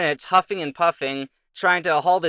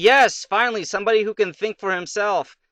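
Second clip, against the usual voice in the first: acted glad, pleased, delighted king voice; 3 semitones higher than usual. Retelling a story about a king and a kid, imitating a happy king. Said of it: "the king's all happy and stuff".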